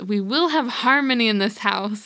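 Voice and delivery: mock steady, firm, resolute tone. Retelling a movie scene in a chaotic kitchen: imitating Julie Andrews yelling. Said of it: "she just yells".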